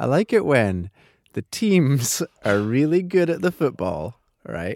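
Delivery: self-amused giggling delivery. Confessing something that sounds silly, the speaker is laughing at oneself. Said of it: "Sorry, I'm laughing at myself".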